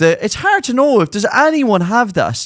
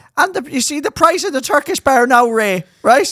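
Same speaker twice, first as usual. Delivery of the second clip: put-on old lady voice, higher; 5 semitones higher than usual. Imitating an old woman ringing to complain about prices: old woman caller. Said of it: "an owl one ringing you going".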